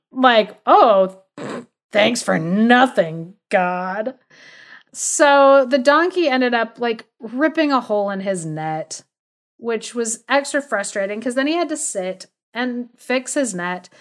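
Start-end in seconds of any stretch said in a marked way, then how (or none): 0.7-4.2 mock sarcasm, slow and heavy. Retelling a story, the speaker acts out his very sarcastic remark to God. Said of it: "he was being like very sarcastic".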